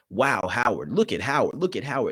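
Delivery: mock sports commentary, stunned and disbelieving. Retelling a commentator reacting as Howard expands the lead, imitating astonishment. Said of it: "absolute astonishment in the tone of her voice".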